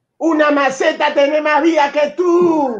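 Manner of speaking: put-on high-pitched, loud, taunting shout. Retelling what Quiroga yelled at a goalkeeper: imitating Quiroga shouting. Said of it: "y Quiroga le gritó".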